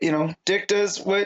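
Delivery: normal talking voice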